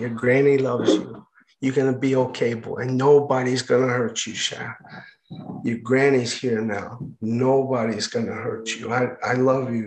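put-on quiet, soft, close-sounding Cajun accent. Recalling his grandmother leaning close to comfort him, speaker quotes her: put-on Cajun accent. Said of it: "In this Cajun accent".

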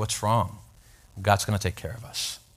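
put-on whisper. Retelling what mom said in the empty restaurant: imitating a whisper. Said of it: "they kinda whisper".

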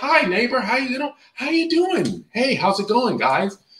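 put-on cheerful tone. Mimicking neighbors with money greeting each other, mock-happy greeting. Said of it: "They're gonna fucking talk happy".

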